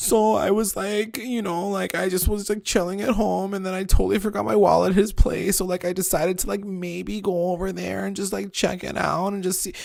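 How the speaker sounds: tearful, weepy speech while crying. Retelling how a woman told her story, doing an impression of her. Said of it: "your impression was so good".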